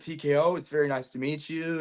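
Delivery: put-on nervous, hesitant tone. Retelling meeting TKO for the first time: imitating own nervous greeting. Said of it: "I was very nervous".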